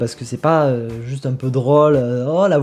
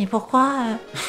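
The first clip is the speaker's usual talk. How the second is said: gentle fake father voice; 8 semitones higher, 5 dB quieter than usual. A speaker retells a question they asked their father, in a put-on voice. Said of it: "je fais la voix".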